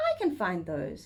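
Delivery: ordinary delivery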